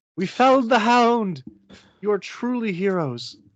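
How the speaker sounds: shrill, very high, carrying yell. Voicing a character calling down from a balcony after a fight: Catherine yelling. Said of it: "Catherine from the balcony yell and go".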